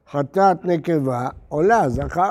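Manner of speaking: ordinary talk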